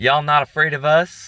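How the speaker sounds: loud, high-pitched shout. Retelling a man on the street calling out to them: imitating someone shouting. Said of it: "he shouts out".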